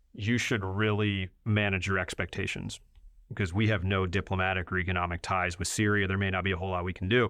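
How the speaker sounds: usual speaking voice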